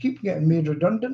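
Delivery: ordinary delivery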